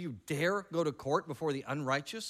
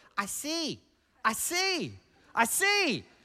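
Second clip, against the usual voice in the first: put-on toddler voice, much higher and slower; 10 semitones higher, 5 dB louder than usual. Retelling what a toddler kept saying after getting her glasses, in a little toddler voice. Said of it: "In her little toddler voice".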